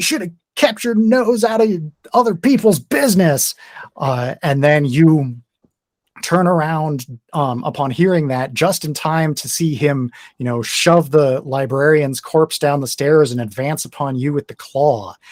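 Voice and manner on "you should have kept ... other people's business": raised, high-pitched shouting. Narrating the scene to a player, the speaker voices the deputy as he shouts out. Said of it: "And he shouts out".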